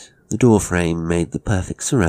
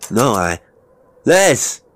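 calling out loudly, high; 6 semitones higher, 4 dB louder than usual. After trying Les's door in vain, he calls to Les: called out. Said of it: "he called".

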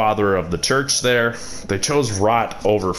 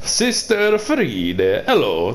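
Italian accent, high-pitched and sing-song; 6 semitones higher than usual. Greeting Sister Friede, with an Italian accent. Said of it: "Now I'm sounding Italian".

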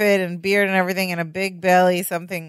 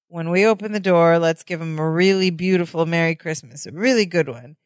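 ordinary talk

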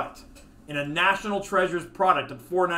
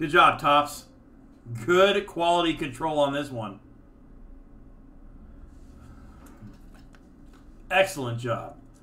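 mock sarcastic tone, lower pitch; 3 semitones lower than usual. Speaking to Tops about a relic card that came without its sticker: sarcastic praise. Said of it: "Are you being sarcastic or serious?".

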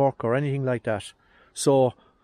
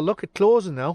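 sarcastic tone, slightly pitched up; 5 semitones higher, 3 dB louder than usual. Showing viewers how a car part closes now, sarcastic. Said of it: "That's me being sarcastic again".

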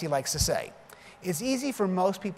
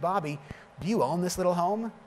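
mock self-satisfied, smug, pointed delivery. Bobby retelling a visitor's question during a tour of his home: imitating a smug question. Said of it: "he smugly said".

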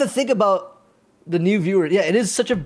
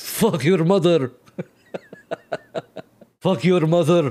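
put-on delivery with strongly rolled r's. Repeating a line from a clip, imitating it: rolling the R's. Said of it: "if I could roll the R's at the end there".

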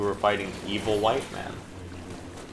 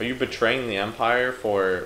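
usual speaking voice

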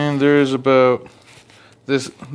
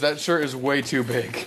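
normal talking voice

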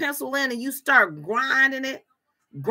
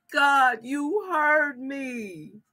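put-on bawling, imitating a woman crying. Acting out a woman whose prayer was answered: imitating Sarah bawling. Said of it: "she's bawling and she's crying".

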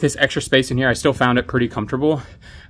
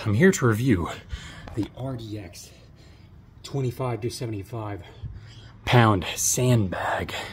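soft, halting, winded, breaking mid-phrase; 6 dB quieter than usual. Reviewing a sandbag for Amazon viewers right after a ruck, the speaker is out of breath. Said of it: "Sorry I'm out of breath".

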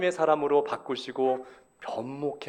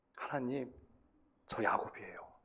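soft, tearful voice. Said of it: "울면서 얘기했을 거예요".

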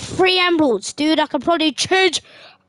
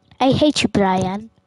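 put-on stupid voice, much lower; 7 semitones lower than usual. Acting out a squabble between two characters, in a stupid put-on voice. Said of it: "I like how I did that stupid voice".

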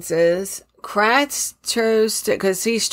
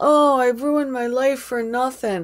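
put-on tearful voice; 4 semitones higher than usual. Retelling what a man said as he burst into tears: imitating someone crying. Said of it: "He starts crying".

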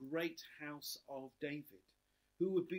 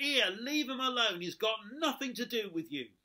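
put-on loud, shrill, scolding little girl voice; 7 semitones higher, 8 dB louder than usual. Telling of a nativity play, quoting the girl playing Mary: retelling a loud telling-off. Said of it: "told him off in a loud voice".

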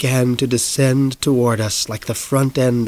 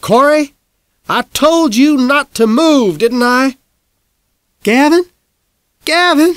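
very high, shrill, loud, stern motherly scolding; 13 semitones higher, 6 dB louder than usual. Reading a story, the narrator voices his mother scolding him. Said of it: "Mom scolded me".

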